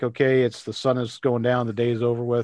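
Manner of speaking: normal talking voice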